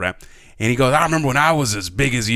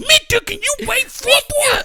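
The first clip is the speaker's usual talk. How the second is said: put-on aggressive kid voice, much higher. Teasing a friend about how his football story keeps changing, mock-aggressive kid. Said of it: "he's aggressive, and he grew like five feet".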